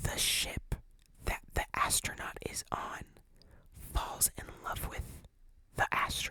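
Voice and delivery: very quiet, hushed whisper, barely voiced. Repeating a sentence for the people in the back, whispered. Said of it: "I'm going to whisper it".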